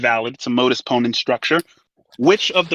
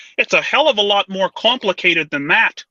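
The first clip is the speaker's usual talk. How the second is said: high-pitched, frog-like puppet voice; 5 semitones higher than usual. Quoting a favourite line as Jordan Peterson would say it. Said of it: "Jordan Peterson says".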